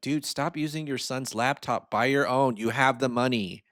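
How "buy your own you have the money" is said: normal talking voice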